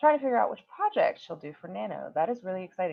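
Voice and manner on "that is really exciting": normal talking voice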